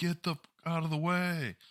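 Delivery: high scream. Retelling how a guy reacted to a confused older couple: imitating someone screaming. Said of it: "this guy starts screaming at them".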